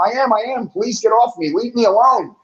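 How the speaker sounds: mimicked yell, pitched high. Retelling being pushed into snow and yelling back: imitating own past yelling. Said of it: "And I'm yelling back at him".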